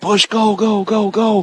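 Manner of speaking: play-acted very high, very slow, drawn-out urging yell. Retelling what gets yelled at a player during games: imitating screaming at a player. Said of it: "I'm screaming at her".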